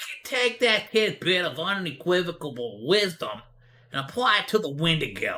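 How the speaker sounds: silly, weird, affected put-on storytelling voice. Reading a Reddit post aloud after being asked to do a voice: put-on weird reading voice. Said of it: "Do the whole voice like that".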